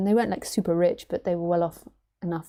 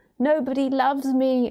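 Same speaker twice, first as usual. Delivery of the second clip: high, pitiful, sad little teddy bear voice; 7 semitones higher, 3 dB louder than usual. Retelling how a man voiced a mangled teddy bear, put-on sad little teddy voice. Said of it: "he did a voice like".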